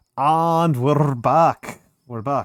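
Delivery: loud, slow, half-slipping vague Scottish accent. Announcing a return after a break: Scottish-sounding accent. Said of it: "Scottishy right there".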